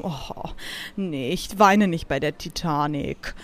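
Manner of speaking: low, quiet, cool and unbothered.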